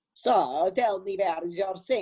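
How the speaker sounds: exaggerated fake Italian accent. Recalling the speaker's plumber role, coming in to ask about the sink: horrible italian accent. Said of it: "Like this horrible, horrible accent".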